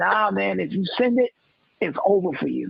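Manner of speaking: usual speaking voice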